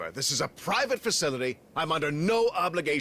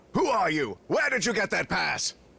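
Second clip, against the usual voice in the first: shouting in anger; 2 semitones higher than usual. Told to put their hands up, a person demands answers: angry yelling. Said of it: "until you stop yelling at me".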